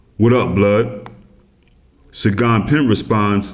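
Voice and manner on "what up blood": put-on aggressive, confrontational cop voice. Retelling how a police officer walked up to the car, imitating Officer Jacobs, aggressive. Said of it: "in his aggressive pig type voice".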